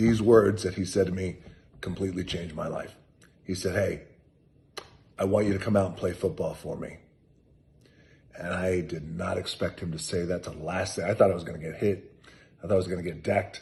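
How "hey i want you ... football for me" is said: plain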